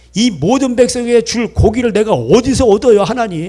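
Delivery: loud, high, exasperated voice.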